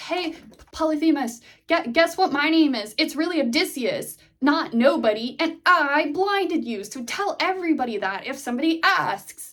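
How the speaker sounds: high-pitched hollered yell, projected into distance. Retelling how Odysseus reveals his real name: imitating Odysseus yelling. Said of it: "he then yells".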